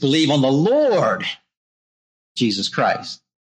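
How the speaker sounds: stress on the word Lord.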